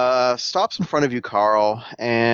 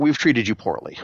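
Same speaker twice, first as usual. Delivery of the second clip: steady, firmed-up, stronger voice. Game master voices a character who mutters, nods, then speaks in a stronger voice. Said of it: "says in a stronger voice".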